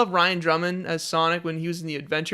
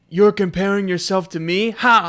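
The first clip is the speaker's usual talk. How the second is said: put-on slight British accent, raised; 5 dB louder than usual. Quoting Shadow's line from Sonic Adventure 2: Shadow voice with British-ish accent. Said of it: "he had the British kinda accent".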